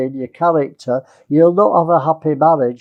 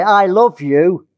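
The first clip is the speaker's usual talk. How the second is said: unloving tone with no tenderness; 3 semitones higher than usual. Speaker shows saying the right words in the wrong tone; unloving tone. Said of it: "That's not very loving in tone".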